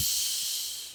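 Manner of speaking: slow, soft, unvoiced shush.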